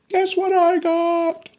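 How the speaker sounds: put-on motherly voice, excited, very high, drawn-out squeal. Retelling a mother bursting in from a store: imitating an excited mother. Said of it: "She came in the house just freaking".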